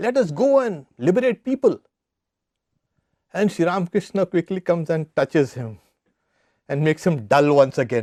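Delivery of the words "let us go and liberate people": mock shouting, much higher. Telling a story about Sri Ramakrishna, the speaker is retelling a man's shout.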